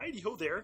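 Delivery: high puppet voice. Announcing Kermit the Frog will play tonight, then greeting in Kermit the Frog voice. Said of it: "will actually be played by Kermit the Frog".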